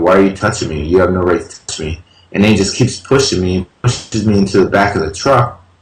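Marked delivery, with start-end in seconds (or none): none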